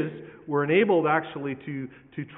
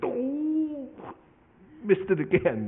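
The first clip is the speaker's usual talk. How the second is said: very slow cartoon voice, "oh" stretched, swooping up high; 8 semitones higher than usual. Speaker imagining the disciples' reaction to being rebuked: Homer Simpson voice. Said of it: "like Homer Simpson".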